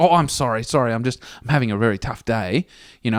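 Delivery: put-on flustered man's voice. Retelling the man behind the glass when paying for fuel; imitating a flustered man. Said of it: "He's all flustered".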